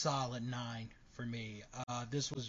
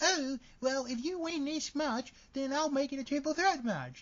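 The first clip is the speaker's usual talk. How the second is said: very high, loud, shrill, crazy put-on British accent; 6 dB louder than usual. Defending Becky Lynch, a speaker acts out Paige's offer as a Paige impression with British accent. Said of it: "She suddenly turned British".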